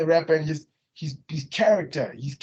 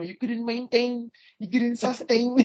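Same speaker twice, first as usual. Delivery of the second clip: put-on funny, jokey, pitched-up comical tone; 6 semitones higher than usual. Telling a friend how he says these words, imitating his funny tone. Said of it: "he's saying it with this funny tone".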